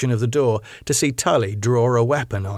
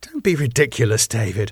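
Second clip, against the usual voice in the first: ordinary delivery, nothing marked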